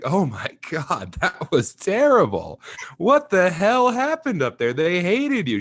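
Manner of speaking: mock maniacal laugh-talk, very high, shrill, loud, cackling throughout. Retelling the speaker's mom's reaction after the bad set, imitating maniacal laughter while talking. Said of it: "she's laughing maniacally".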